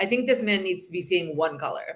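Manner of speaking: ordinary talk, nothing marked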